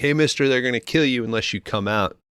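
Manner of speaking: strained, high-pitched screaming. Retelling a film scene where a goon calls to a bungalow: imitating someone screaming. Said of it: "He starts screaming like".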